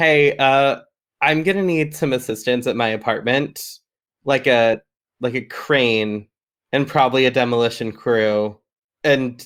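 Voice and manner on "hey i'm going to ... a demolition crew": ordinary talk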